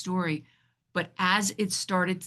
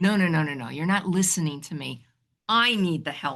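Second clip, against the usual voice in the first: put-on angry, protesting outburst. Retelling a past moment of arguing with a voice: reenacting angry protest. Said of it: "And I got angry".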